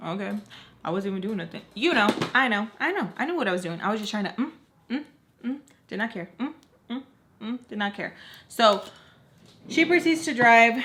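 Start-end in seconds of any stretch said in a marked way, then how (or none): none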